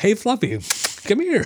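high, cheerful, happy, excitable voice. Showing how to call a dog, in a happy, excitable tone. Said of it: "you hear my tone. It's a lot happier and excitable".

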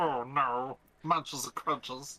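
fantasy cave creature voice. Chatting about a movie, in a Sméagol voice. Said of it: "I thought I was talking to Smeagol".

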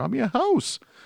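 put-on high-pitched Canadian accent. Retelling what she says at the end: imitating a Canadian accent. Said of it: "she gets a Canadian accent at the end".

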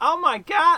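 put-on generic Italian American accent. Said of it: "my impression of a, a, a generic Italian American accent".

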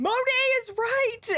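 mock, very high-pitched, shrill shouting. Retelling yelling at the TV at Monique: retelling own yelling. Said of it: "yelling at my T V at Monique".

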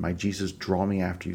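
ordinary talk

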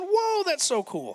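high, slow, drawn-out whoa full of excited wonder. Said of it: "I get excited when I read".

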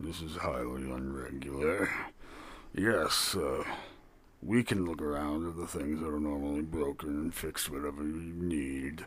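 very low, hushed, soft workman's voice. Storyteller voicing Baba answering a question put to him, speaking as Baba. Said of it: "One is a very large, kind of broad individual that has a tool belt on that is made of leather and has different sorts of like smithy like tools. You see like a hammer as well as like some what / One i".

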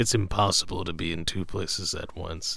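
deep voice, dropped right down low, intoning. Asked to give some of that character's action: deep Lee Kung the Thunderer voice. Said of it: "you do this deep voice thing".

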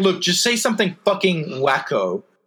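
ordinary delivery

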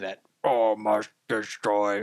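put-on robotic voice. Describing a robot that rolls around the main settlement, sentry bot voice. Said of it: "He's got that sentry bot voice too".

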